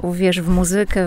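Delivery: casual muZYkę with stress on second-last syllable ZY. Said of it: "ten akcent byłby na drugą, a nie na trzecią sylabę od końca".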